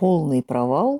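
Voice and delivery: ordinary talk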